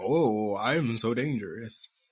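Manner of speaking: mocking villain voice, very slow and drawn out. Picturing Snively alone in front of the mirror: mocking Robotnik voice. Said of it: "says in a mocking Robotnik voice".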